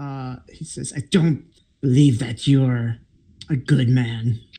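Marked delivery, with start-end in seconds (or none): 1.0-4.4 louder voice with a glaring edge. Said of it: "he kind of glares at you".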